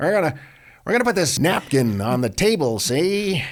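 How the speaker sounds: put-on old-time gangster voice. Co-hosts banter mid-presentation, in a 1930s gangster voice. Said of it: "You sound like a 1930s gangster".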